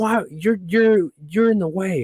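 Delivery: high, scolding, rebuking scream. Retelling a parking-lot confrontation with a stranger: imitating a woman screaming. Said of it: "starts screaming at me".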